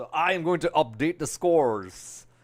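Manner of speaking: put-on American accent. Announcing that the scores will now be updated: American accent. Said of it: "I do an American accent".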